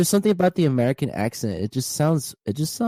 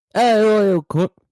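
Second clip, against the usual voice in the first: fake European accent, higher and louder; 8 semitones higher, 5 dB louder than usual. Showing a friend how to say the line: put-on european accent. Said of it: "in some kind of European accent".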